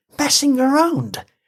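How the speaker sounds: very high, hissed through gritted teeth. Narrating a woman confronting the man who pranked her on Halloween, hissed through clenched teeth. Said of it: "She hissed the words through clenched teeth".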